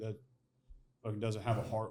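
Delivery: normal talking voice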